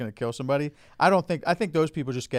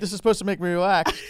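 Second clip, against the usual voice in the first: pretend shouting, higher and louder; 7 semitones higher, 4 dB louder than usual. Acting out an anxious painting-show viewer: mock yelling. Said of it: "Why are you fucking yelling?".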